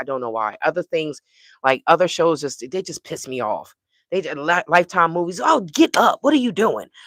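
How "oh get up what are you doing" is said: pitched-up, loud yelling. Describing watching Lifetime movies, retelling yelling at the TV. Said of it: "I be yelling at the TV like".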